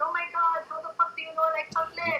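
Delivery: put-on heavy, strong French accent throughout, pitched high. Retelling what a woman said on a follow-up call, in a strong French accent. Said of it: "strong French accent".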